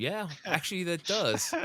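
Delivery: laughing while talking. Voicing a character who snickers then breaks into laughter, laughing while talking. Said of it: "start snickering and then start laughing, going".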